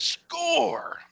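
put-on high, creaky sportscaster shout.

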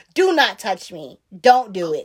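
put-on seriousness. Retelling refusing a hug when she asks, retelling own dead-serious refusal. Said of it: "and the most serious".

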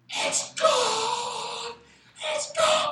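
put-on very high shriek, stretched long, drawn out. Retelling how a woman screamed during a church service, imitating a scream.

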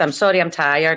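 normal talking voice

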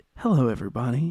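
easygoing, relaxed voice. Imitating a TV painter greeting viewers: relaxed Bob Ross voice. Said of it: "definitely in the tone of his voice".

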